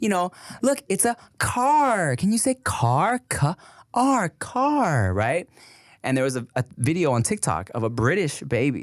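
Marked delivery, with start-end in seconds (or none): 0.6-5.1 very high, very slow, stretched-out "car". Describing a children's video teacher's lessons: imitating Miss Rachel teaching a word. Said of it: "she'll do videos where she's like".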